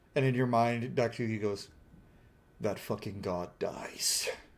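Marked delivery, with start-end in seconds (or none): 2.6-4.3 angry, breathy whisper under the breath. Voicing a character's thought after anger fills his face: angry. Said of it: "anger fills his face for a second".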